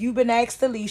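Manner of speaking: mock, really loud, high voice. Quoting what a woman told the speaker, imitating her saying it loudly. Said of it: "She said it real loud".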